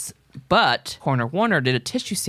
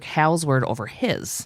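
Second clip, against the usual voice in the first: ordinary talk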